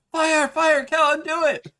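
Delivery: very high, shrill, egging-on, urging shout. Acting out the players urging Callan on: imitating players shouting. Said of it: "here's you all shouting".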